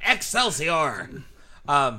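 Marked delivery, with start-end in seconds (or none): 0.1-1.1 bad put-on old man voice, higher and louder. Trying a quick impression after another: bad Stan Lee impression. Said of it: "that was fucking horrible".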